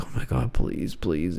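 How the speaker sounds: play-acted desperate, frantic pleading, freaking out. Retelling a gambler who is losing his money: imitating a gambler freaking out. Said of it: "He's freaking out".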